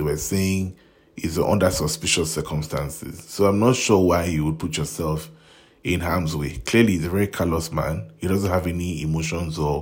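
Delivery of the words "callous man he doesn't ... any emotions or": ordinary talk, nothing marked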